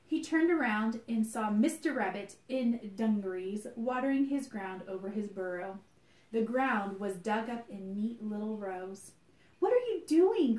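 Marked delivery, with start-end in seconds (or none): 9.6-10.5 very high, shrill, loud called-out cry. Narrating a story, the Easter Bunny cries out to Mr. Rabbit: cried out. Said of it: "cried the Easter Bunny".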